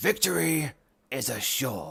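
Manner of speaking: rough, creaky, raspy military-style voice. Thanking a viewer for a tip with a Commissar voice: Commissar voice. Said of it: "my best Commissar impression".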